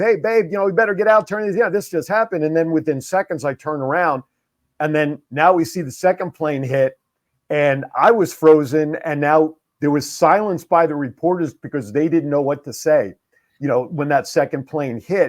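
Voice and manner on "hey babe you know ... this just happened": mild call, voice sent upward. Retelling calling up to his wife about the news: retelling yelling to his wife. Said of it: "I'm yelling up to my wife".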